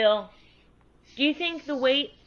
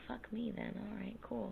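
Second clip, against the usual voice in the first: almost whispering, right under the breath. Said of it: "You're whispering again".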